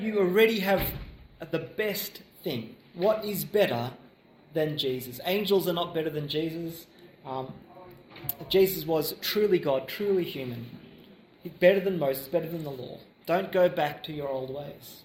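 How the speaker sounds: ordinary delivery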